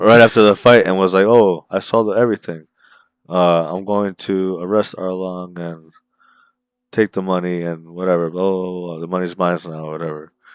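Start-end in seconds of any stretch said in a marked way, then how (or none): none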